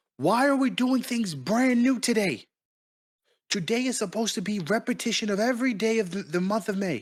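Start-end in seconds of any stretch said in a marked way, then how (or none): 0.2-2.5 angry outburst, raised and pitched up. Speaker acting out their own words to the group, with a raised voice. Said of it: "I have to raise my voice".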